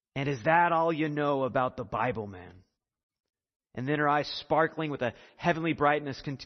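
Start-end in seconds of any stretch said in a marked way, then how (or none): 0.2-2.6 put-on broad Scottish accent, laid on thick. Retelling an old woman's reply to a young man: thick scottish accent. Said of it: "this is what she said in her thick Scottish accent".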